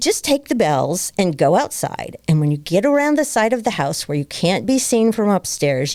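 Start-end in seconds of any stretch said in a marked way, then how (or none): none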